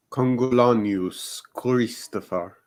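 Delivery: put-on Roman accent. Asked by the others to say a full name, in a roman accent. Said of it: "I need your Roman accent for this".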